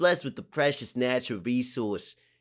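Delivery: ordinary delivery, nothing marked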